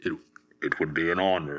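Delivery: deep, masked villain voice. Trying to remember how it goes, the speaker attempts a Darth Vader impression. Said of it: "Darth Vader impression".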